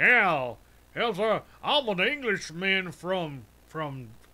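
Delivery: over-the-top, loud, exaggerated put-on southern twang. Speaker mocking how a show cast an english actor, southern twang. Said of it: "I got me a southern twang".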